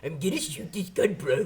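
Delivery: high cartoon character voice. Recalling tactical training, redoing the voice used while shooting: Muscle Man voice. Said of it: "You do Muscle Man".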